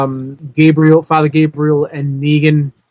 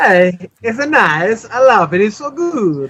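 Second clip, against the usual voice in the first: mock Eastern European accent, higher pitch; 5 semitones higher than usual. Asking another speaker if he's saying it like Borat, then doing a Borat voice. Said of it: "Are you saying it like Borat?".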